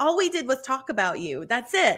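ordinary delivery

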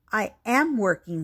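ordinary delivery, nothing marked

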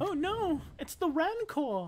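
high, fussy robotic voice. Speaker reacts to spotting the Rancor, C-3PO impression. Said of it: "my best C-3PO impression".

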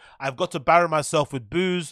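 ordinary delivery

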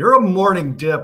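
full-throated, very loud, drawn-out high scream. Retelling what was called out to the other speaker: retelling own scream. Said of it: "and I screamed out".

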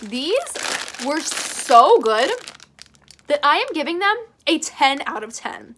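loud voice crack on so good. Reviewer announces a score to viewers after tasting, with a big voice crack. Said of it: "That was a very big voice crack there".

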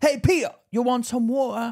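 put-on very high Cockney accent with a Japanese twang. Retelling how he talked when offering Peter water, Cockney with Japanese twang. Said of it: "But with the Japanese twang".

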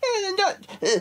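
high, squeaky mock pedantic know-it-all voice. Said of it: "there's gonna be some dickhead out there".

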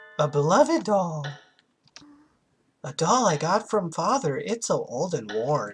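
creepy cartoon mouse voice, swooping in pitch. Reading a game's text aloud as the character Aya, in a creepy Mickey Mouse voice. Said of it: "I sound like a very creepy Mickey Mouse".

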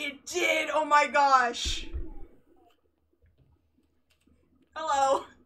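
very loud, very slow, drawn-out delighted excitement. Finding voice chat finally works and greeting the other player, excited. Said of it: "why do you sound so excited?".

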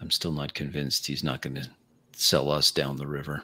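low, hushed tone under the breath. A role-play character makes an aside to the party, in a low tone. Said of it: "in a low tone".

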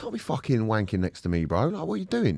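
put-on angry ranting. Retelling confronting a man in the next cubicle, imitating going nuts angrily. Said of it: "So I just went nuts".

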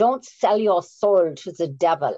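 put-on grave, theatrical, dramatic Viennese accent.

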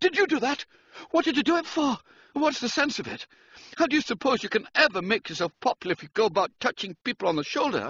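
startled, nerves frayed. Startled when touched on the shoulder, he snaps at his friend: jumpy, nerves frayed.

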